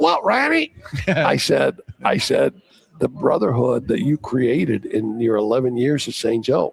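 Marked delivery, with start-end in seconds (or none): 0.0-0.7 tiny, very high, squeaky little voice. Retelling the coach's reply to him, in a squeaky little voice. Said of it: "his squeaky little voice".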